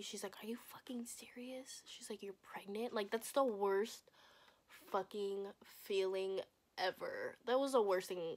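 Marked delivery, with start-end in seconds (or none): 0.4-2.9 put-on anger, much quieter. Retelling her mother's reaction to learning she was pregnant, retelling mom's anger. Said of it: "She was so mad at me".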